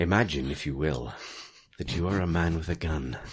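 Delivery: fake seductive voice. Doing the bit again at the others' request, in a put-on sexy voice. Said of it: "do sexy voice again".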